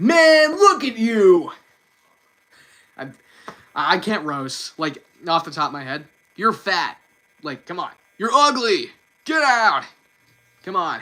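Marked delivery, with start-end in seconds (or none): 0.0-9.8 loud, slow, swooping sing-song cartoon voice. Roasting oneself after a viewer request: Sonic voice. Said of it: "Roast yourself with the Sonic voice".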